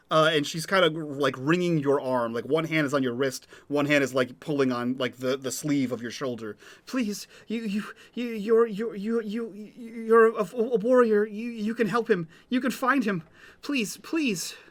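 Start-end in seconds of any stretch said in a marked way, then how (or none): 6.8-14.5 high, tearful, crying, babbling and stammering. A woman begs the warrior to help find her missing son, crying plea. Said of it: "like crying".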